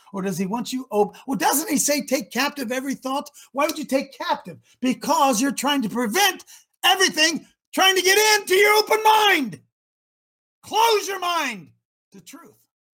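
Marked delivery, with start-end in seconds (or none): 6.8-12.5 fired-up yelling, climbing in pitch. Speaker addressing the folks one morning; yelling. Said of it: "I don't know why I'm yelling so much this morning".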